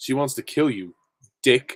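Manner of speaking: slow delivery with a beat of silence before the word. Retelling how he delivered the line, with a pause before dick. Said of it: "he took a pause before he said Dick".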